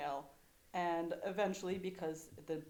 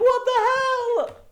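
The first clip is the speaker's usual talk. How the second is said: very loud, very high laughing scream; 18 dB louder than usual. Recalling blood suddenly everywhere, acting out laughing and half-screaming at your dad. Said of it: "kind of screaming at my dad".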